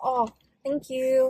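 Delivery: put-on sugary, polite, sweet baby voice. Asked why they say thank you like that, speaker shows a sweet baby voice. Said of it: "I'm trying to sound sweet".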